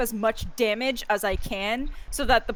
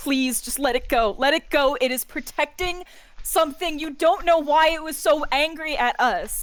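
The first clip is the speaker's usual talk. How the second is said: high, pleading character voice; 5 semitones higher than usual. Pleading with another character to stop attacking and let it go: pleading in character. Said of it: "I'm, like, pleading with you".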